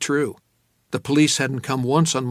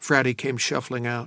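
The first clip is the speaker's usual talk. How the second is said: ordinary delivery, nothing marked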